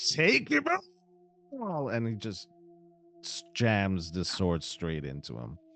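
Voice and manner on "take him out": very high, shrill, swooping yell. Voicing a character who leaps at a monster with a sword: yelling. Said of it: "he yells".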